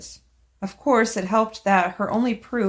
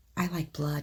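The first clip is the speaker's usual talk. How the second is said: hushed half-whisper under the breath; 4 semitones lower, 9 dB quieter than usual. Retelling what a girl on the couch said at a party: imitating a half-whisper. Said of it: "and whispers".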